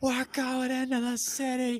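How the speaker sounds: screaming at the top of the lungs, very high-pitched. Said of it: "called me on the phone screaming".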